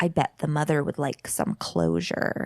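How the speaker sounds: creepy, unsettling voice full of clicks. Recapping a scene, acting out what he says back: creepy, clicky voice. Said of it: "in this like creepy, clicky voice, he goes".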